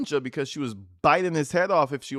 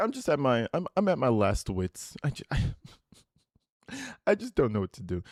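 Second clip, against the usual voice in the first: stumbling, halting pleading with swinging pitch. Retelling what the caller said on the recorded call: imitating the caller's words. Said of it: "He's like".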